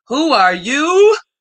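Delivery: high-pitched animated cartoon lion voice. Between shout-outs to listeners, in a Lion King voice. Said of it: "In my Lion King voice".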